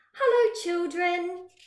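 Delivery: sugary, sweet, high-pitched voice. A narrator reads Miss Nelson greeting the children on her return, in a sweet voice. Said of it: "someone said in a sweet voice".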